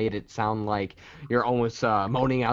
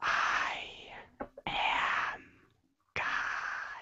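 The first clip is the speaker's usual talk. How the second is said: level, toneless, flat whispered monotone. Showing someone how to say a line: whispered monotone. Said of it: "Whisper it like that".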